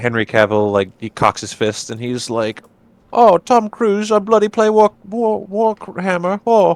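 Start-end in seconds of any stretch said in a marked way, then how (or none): 3.1-6.8 very high-pitched, squeaky character voice. Joking about the actor's Warhammer hobby: Henry Cavill impression. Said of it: "That's my Henry Cavill impression".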